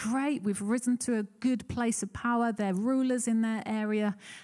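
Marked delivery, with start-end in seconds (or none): none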